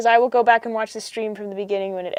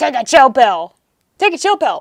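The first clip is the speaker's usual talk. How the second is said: put-on wide-eyed emoticon face voice; 3 semitones higher, 7 dB louder than usual. Reading out a chat message as an impression of the 8-O face. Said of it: "That's my impression of the eight dash O face".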